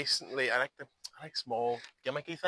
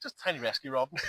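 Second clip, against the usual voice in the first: put-on deadpan, straight-faced delivery. Retelling a joke on a referee checking for weapons: retelling a deadpan line. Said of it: "with a straight face".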